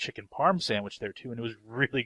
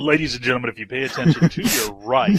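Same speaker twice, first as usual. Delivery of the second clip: very loud, booming radio announcer voice; 2 semitones higher, 10 dB louder than usual. Describing Austin to the group, in a really big radio voice. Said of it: "describing Austin to us in like a really big radio voice".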